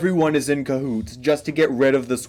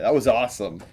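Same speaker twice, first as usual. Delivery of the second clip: ordinary talk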